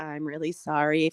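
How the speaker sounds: very low, flat monotone, as if read off paper. Mimicking how a woman apologized today, like a hostage reading off paper. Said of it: "Like a hostage, like a hostage reading off a paper".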